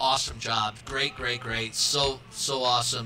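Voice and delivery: ordinary talk, nothing marked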